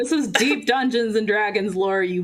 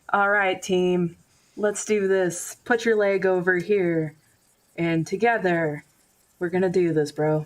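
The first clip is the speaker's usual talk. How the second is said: mock soothing, really calm bodybuilder coach tone. Retelling a bodybuilder leading a yoga class, imitating his really calm voice. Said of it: "in a really calm voice".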